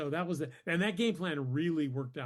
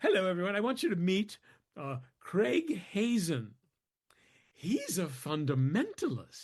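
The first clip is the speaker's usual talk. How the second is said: acted, proud, grand announcing tone; 4 semitones higher than usual. Retelling how a department chair introduced him to friends: imitating a proud introduction. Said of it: "she thought we'd all be shocked".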